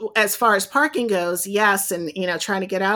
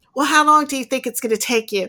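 put-on New York accent, higher; 4 semitones higher than usual. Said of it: "he had a New York accent too".

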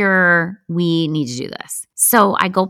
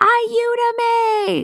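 high, panicked scream. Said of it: "And I'm yelling out".

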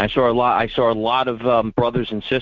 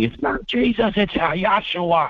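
higher-pitched put-on screaming; 8 semitones higher than usual. Retelling what an attacker screamed at him: imitating someone screaming. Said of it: "he started screaming".

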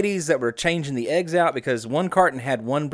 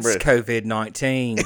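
put-on English accent, lower; 4 semitones lower than usual. Announcing the topic again after being asked to: british accent. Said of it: "you gotta do it in the British accent".

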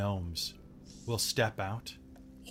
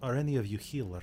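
bad, fake put-on Russian accent. Voicing a space gnome asking the group which of them is a healer, bad Russian accent. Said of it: "They had all Russian accents".

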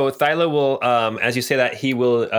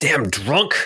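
harsh, angry swearing delivery; 2 semitones higher than usual. Voicing a tripped-up soldier cursing at a player: cursing at someone. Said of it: "he starts cursing at you".

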